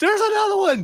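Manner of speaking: high, loud scream. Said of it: "were just screaming".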